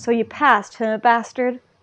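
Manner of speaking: ordinary talk, nothing marked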